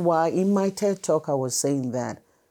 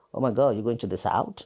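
lower laughing voice; 6 semitones lower than usual. Retelling a friend's reaction to the move to Nashville: imitating a laughing friend. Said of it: "they were laughing like".

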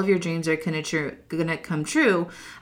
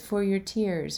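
mock broken English, quieter; 6 dB quieter than usual. Retelling what a waiter said when handing over napkins: imitating broken English. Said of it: "or something like that in broken English".

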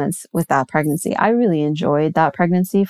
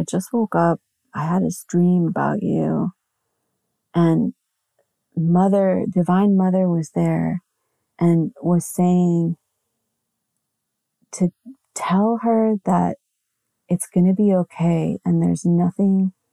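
imitated drowsy, groggy voice. Retelling a friend's voicemail left right after she woke: imitating a groggy friend. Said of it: "all groggy".

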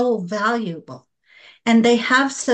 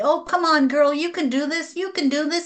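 high-pitched, cheering, encouraging tone; 5 semitones higher than usual. Showing how to talk to your bestie: cheering on a friend. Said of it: "we're like their cheering squa-, squad".

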